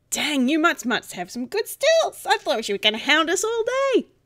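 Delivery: high, talking statue dog character voice. Voicing a talking statue dog who teases the players: talking statue dog voice. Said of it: "the statue dog's voice again going".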